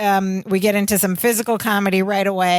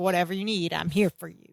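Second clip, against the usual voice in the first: smug, self-satisfied tone, cutting in over others; 2 semitones lower, 8 dB quieter than usual. Retelling a character talking over another to offer help: imitating a smug tone. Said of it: "He's smug".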